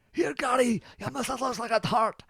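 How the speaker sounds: high, taunting, jeering impression voice.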